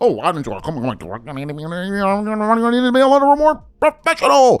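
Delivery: mock prim, fussy voice.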